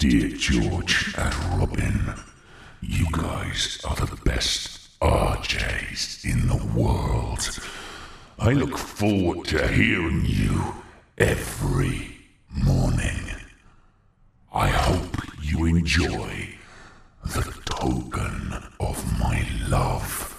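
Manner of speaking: very low, very slow, creepy, spooky rasp. Reading aloud a card sent to the hosts, in a scary voice. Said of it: "Shall I read it in a scary voice?".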